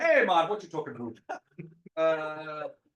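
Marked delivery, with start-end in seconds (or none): 0.0-1.2 Canadian-sounding voice, higher.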